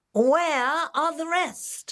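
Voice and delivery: insistent, demanding tone pitched way up high. The piper, after counting the gold coins, speaks to the mayor, demanding. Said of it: "he demanded".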